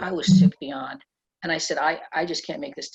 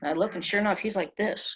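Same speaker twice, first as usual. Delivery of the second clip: ordinary talk, nothing marked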